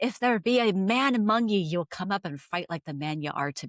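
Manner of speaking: furious voice in odd put-on English accent. Retelling a legend, Mary yells down the stairs at the men: Mary's angry yell, retold. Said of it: "she is so pissed".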